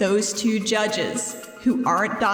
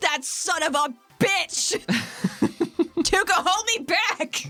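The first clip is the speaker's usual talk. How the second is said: high, furious, angry shout in natural voice; 8 semitones higher than usual. A character shouts, asking a companion to hold her back; shouting. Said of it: "Athena shouts with her actual voice".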